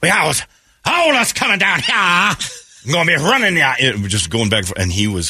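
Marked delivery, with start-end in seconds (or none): 0.0-3.7 very high, wild, crazy preacher energy. Retelling a high-energy ad read: imitating a crazy Baptist preacher. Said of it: "so I did the, the crazy Baptist preacher".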